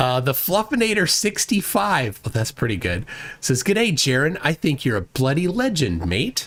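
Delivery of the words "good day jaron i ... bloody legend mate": best-effort put-on Australian accent. Reading out what the Fluffinator sixty-five says, in an Australian accent. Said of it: "That was my best Australian accent".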